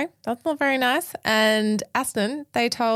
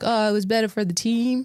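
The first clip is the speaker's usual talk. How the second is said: fake, put-on American accent. Quoting a team boss after a race call, in a put-on american accent. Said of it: "That's my American accent".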